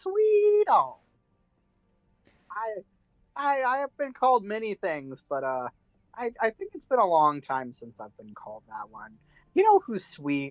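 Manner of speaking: sheepish, embarrassed. Voicing Homer, flattered at being called sweet: sheepish.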